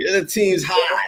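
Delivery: imitated Boston accent. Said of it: "I heard the Boston".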